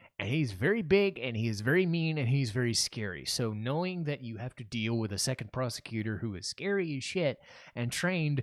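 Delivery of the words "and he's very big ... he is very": usual speaking voice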